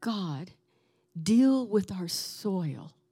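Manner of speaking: small, slow, little tiny voice.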